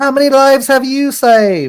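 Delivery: shrill, booming, loud, high, put-on British accent. Joking about what someone could say after saving lives: British accent. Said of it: "he could say it in a British accent".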